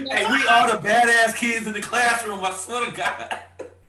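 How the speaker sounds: very high, loud, playful laughing shout.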